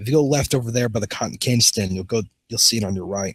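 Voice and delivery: ordinary delivery, nothing marked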